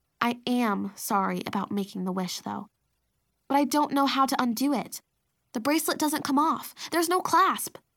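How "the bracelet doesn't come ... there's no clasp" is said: ordinary delivery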